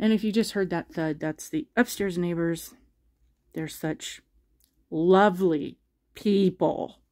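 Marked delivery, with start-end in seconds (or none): 3.5-6.9 very slow, heavily sarcastic drawl. Talking about the upstairs neighbors after a thud: dripping with sarcasm. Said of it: "Can you tell the sarcasm dripping from that?".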